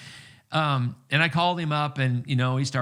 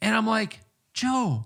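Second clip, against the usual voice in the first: ordinary delivery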